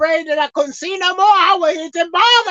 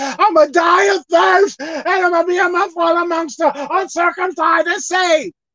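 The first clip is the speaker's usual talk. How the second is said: acted-out tearful, sobbing, crying voice. Retelling a Bible story of a thirsty man, acting out a man crying out. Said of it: "he was crying that he was thirsty".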